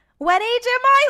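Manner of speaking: very high, loud, blurted shout. Retelling being a kid at a restaurant: imitating own past loud question. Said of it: "really loud".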